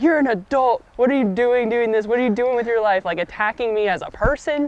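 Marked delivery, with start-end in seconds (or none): 0.0-3.0 put-on old man's screamed, berating rant. Retelling how an old man screamed at the speaker: imitating an old man screaming. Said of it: "screaming at me of".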